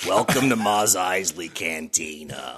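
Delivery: put-on smoker's voice. In a group riff, playing Leia in a heavy-smoker voice. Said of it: "smoking 4 or 5 packs a day".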